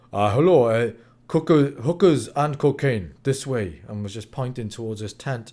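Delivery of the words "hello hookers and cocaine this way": brooding put-on German accent, louder and much slower. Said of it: "in this very brooding, you know, German accent".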